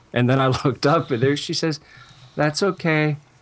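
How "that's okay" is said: put-on tiny, light voice. Retelling a very tall woman's reply to his apology; tiny, light voice. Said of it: "she had this real tiny, light voice".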